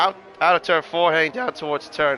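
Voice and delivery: voice cracking, breaking mid-word. A commentator calls a car through the turns, voice cracks. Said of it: "I had a voice crack there".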